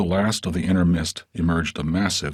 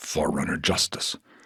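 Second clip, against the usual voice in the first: low, deep, rumbling growl from the chest; 3 semitones lower, 4 dB quieter than usual. A narrator reads a character's reply, low deep growl. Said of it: "he growled low and deep".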